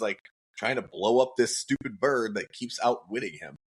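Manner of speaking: ordinary talk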